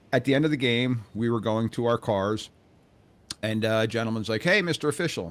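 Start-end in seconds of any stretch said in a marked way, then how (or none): 4.4-5.3 mock very courteous, proper, pitched-up tone. Retelling a man calling to a sideline official after a game; mock-polite greeting. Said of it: "said it very politely".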